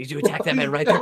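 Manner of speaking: whispered delivery. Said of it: "I'll whisper".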